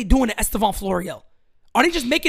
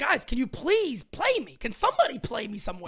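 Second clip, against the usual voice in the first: put-on pleading ballplayer voice, quieter; 7 dB quieter than usual. Imitating Andujar begging to be played: imitating Andujar begging. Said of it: "Andujar's begging".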